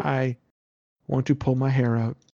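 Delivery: fake poker-faced, flat delivery. Imitating a gamer who feels emotions but shows none: mock emotionless voice. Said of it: "feeling emotions but not expressing them".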